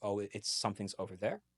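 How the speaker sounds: usual speaking voice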